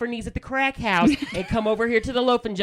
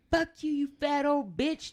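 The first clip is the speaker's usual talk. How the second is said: mock, high, mild, toned-down youthful yell; 5 semitones higher, 6 dB quieter than usual. Retelling how kids in a store yelled at the worker, imitating kids yelling. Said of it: "just yelling and screaming".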